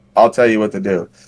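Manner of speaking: ordinary talk, nothing marked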